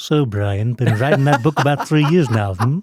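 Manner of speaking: very loud cartoon character voice, fully in character. Doing a Stewie impression: Stewie impression. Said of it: "That is a phenomenal Stewie impression".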